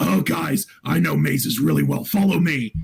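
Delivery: gruff, rough, creaky beast character voice. Retelling own in-game lines as a minotaur barbarian: minotaur character voice. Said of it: "the character's voice, because he was a minotaur".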